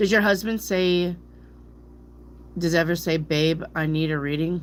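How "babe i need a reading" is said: ordinary talk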